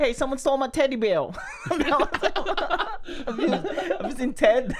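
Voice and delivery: put-on Boston accent. Asked to do a Boston accent, the speaker does a Mark Wahlberg Boston accent. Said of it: "That's a perfect Boston".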